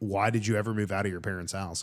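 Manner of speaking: ordinary talk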